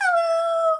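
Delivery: top of vocal range. Leading a group rhyme, saying hello as high as you can, very high-pitched hello. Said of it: "Let's say hello as high as we can".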